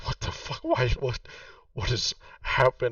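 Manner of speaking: dazed, stunned mumbling under the breath. Narrator voicing a man kneeling over his wife, muttering to himself. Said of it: "just like muttering to himself".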